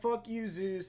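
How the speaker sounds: normal talking voice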